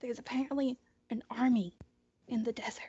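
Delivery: confiding, conspiratorial, secretive stage whisper. A character passes along what she has heard: whispering. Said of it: "and she's whispering at this point".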